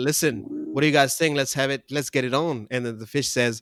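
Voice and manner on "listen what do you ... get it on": ordinary talk, nothing marked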